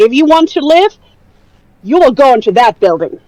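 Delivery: loud, plain, businesslike, matter-of-fact call. Voicing a character calling to a civilian: matter-of-fact loud call. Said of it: "just very matter-of-factly but loudly say".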